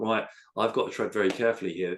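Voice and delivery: ordinary talk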